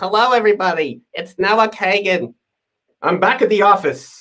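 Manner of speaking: nasal, nasally voice. Recording a video for Facebook and greeting everybody, in a nasal voice. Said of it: "I'm like so nasally".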